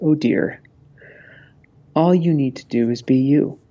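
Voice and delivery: slow, tearful voice, words drawn out. Retelling what a grandmother said while tearing up: imitating Grandma Ginny tearing up. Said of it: "starts to tear up a little bit".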